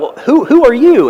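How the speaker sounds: high, loud, startled yell.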